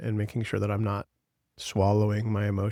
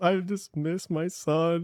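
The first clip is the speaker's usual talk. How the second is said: mock sobbing, drawn out and very slow; 8 semitones higher than usual. Retelling missing a son while watching college football: imitating own sobbing. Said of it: "And I'm, like, sobbing".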